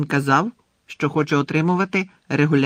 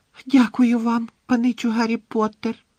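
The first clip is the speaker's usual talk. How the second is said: high, panting, breathless little elf squeak; 8 semitones higher than usual. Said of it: "важко дихаючи пропищав він".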